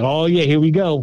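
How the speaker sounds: ordinary talk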